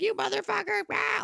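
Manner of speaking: very high yelled outburst. Voicing a pet yelling from upstairs: imitating a yelling pet. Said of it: "she'll be yelling at me like".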